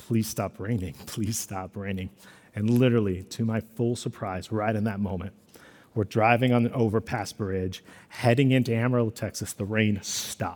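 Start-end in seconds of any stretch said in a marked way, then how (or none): 0.1-2.1 low, hushed mutter under the breath. Retelling a plea while driving into a storm: imitating muttering under breath. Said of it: "I'm just muttering".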